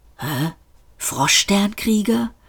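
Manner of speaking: muttered under breath. A former president reacts to a man's hissed threat, murmured. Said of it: "murmelte Seyfort".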